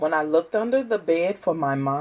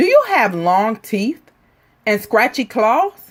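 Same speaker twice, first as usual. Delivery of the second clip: ordinary delivery, nothing marked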